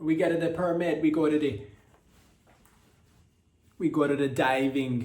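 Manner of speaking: put-on Jamaican accent gradually creeping in. Telling a diving story about five Italians, drifting into a Jamaican accent. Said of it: "I don't know why it's sounding more Jamaican".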